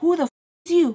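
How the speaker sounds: acted pissed-off, angry, high-pitched voice with attitude. Retelling how she challenged the visitor: imitating someone pissed off. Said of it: "she's so pissed".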